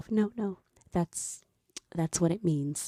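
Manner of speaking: aside to herself. Retelling how a woman reacted to a man's explanation: imitating someone speaking quietly to herself. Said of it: "says quietly to herself".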